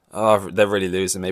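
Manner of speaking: ordinary talk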